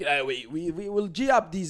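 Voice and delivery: slow, put-on, fake Russian accent. Speaker, talking about game terrorists, voices their thoughts in a put-on russian accent. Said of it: "why am I chucking a Russian accent on?".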